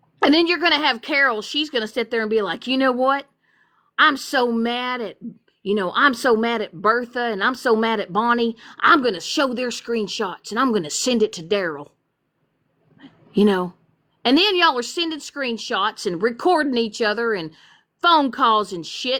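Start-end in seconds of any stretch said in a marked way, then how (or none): 2.7-13.7 imitated Southern accent. Acting out a hypothetical person complaining about friends, in a put-on southern accent. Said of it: "it's a fucking Carol, Southern".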